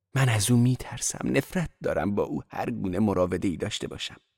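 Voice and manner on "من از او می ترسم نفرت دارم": plain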